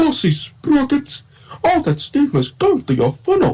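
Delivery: very high character voice swooping all around. Doing the same Thomas line again, in an Eddie Glenn voice. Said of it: "now here's my Eddie Glenn voice".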